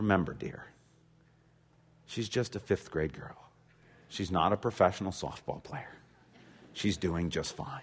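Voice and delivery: hushed, gentle, kindly and reassuring whisper. Retelling a mom calming the dad at the game: imitating a whisper. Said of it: "puts her hand on dad's knee and whispers".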